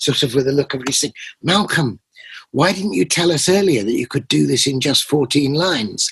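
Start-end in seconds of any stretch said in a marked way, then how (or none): 1.4-6.1 imitated hushed, almost whispered voice. Retelling what a member of the congregation said: imitating a near whisper. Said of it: "saying to me almost in a whisper".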